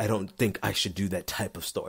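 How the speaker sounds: overdramatized, theatrical acting-out. Speaker acts out his past self turning down a story, exaggerated dramatic acting-out. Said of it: "acting it out for dramatic effect".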